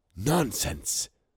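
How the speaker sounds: hushed whisper. Narrating a story, Ceramis answers another speaker's promise: whispered. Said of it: "whispered Ceramis".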